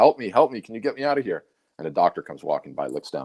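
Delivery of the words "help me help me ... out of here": loud yelling out. Telling a story about a man stuck in a hole, acting him out: imitating a man yelling for help. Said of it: "he's yelling in the hole".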